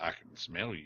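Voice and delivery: put-on deep narrator voice. Trying out a Morgan Freeman voice for the other hosts. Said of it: "Been working on my Morgan Freeman voice".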